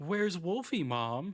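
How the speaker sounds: put-on small boy's voice. Showing off an impersonation of little boys, little boy impression. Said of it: "very good impersonations of little boys".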